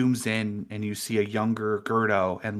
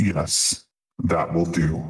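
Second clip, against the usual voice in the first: eerie possessed voice, lower and louder; 5 semitones lower, 4 dB louder than usual. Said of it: "What was that voice?".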